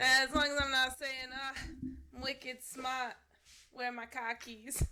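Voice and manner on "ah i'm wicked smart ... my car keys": deliberately horrible put-on New England accent. Joking about picking up local slang: horrible New England accent. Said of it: "Gonna do a horrible New England accent".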